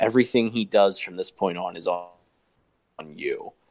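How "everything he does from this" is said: plain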